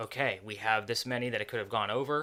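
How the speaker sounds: ordinary delivery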